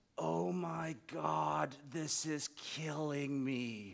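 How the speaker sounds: very low, hushed mutter under the breath. Quoting a woman right behind him during a moment of silence, very low voice. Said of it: "she says in a very low voice".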